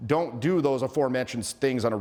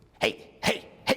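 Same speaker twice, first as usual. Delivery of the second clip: overly aggressive, pushy, somewhat overbearing tone. Demonstrating a vibe mistake, a little overly aggressive. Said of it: "like a little overly aggressive".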